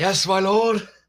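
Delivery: high, strained words forced through pained screams. A player's character answers the screaming skeleton while screaming. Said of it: "Through my screams, can I possibly say".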